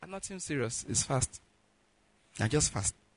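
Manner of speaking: weak, tired, weary voice. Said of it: "sir, what's the problem".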